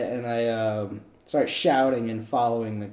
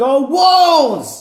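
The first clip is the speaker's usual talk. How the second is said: very high, very loud battle shout; 14 semitones higher, 9 dB louder than usual. A role-play player's character calls out during a goblin fight, shouting. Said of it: "I shout".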